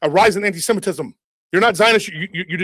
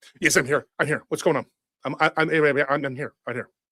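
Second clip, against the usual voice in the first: hyper, manic, wired voice pitched low; 4 semitones lower, 5 dB quieter than usual. Calling someone who answers frantically: hyper Ben Shapiro impression. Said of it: "You sound like you're on meth mixed with crack".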